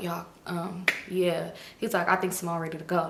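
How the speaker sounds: put-on low voice. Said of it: "he was talking low".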